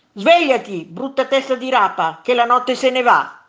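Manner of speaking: shouting, yelling. In a bad mood, the first monster goes to the hole and shouts at the other monster. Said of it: "gridò".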